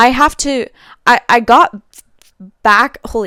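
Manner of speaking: stuttering. Retelling how a truck pulled up and blocked their car: stuttering. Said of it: "I'm stuttering".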